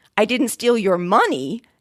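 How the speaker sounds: money punched, pitch falling at the end. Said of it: "with the difference between".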